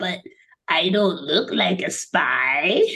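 very slow tiny alien voice, drawn-out "spy". Describing a cute moment, the speaker does his little alien voice. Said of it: "in his little alien voice".

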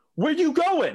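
put-on, shrill, very high, loud preacher yell. Retelling how the pastor called out a student leaving chapel: imitating a pastor yelling. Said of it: "the pastor yells".

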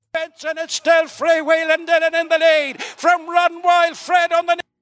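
fast-paced Irish accent. Calling the finish of a horse race: Irish accent at speed. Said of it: "That accent at speed".

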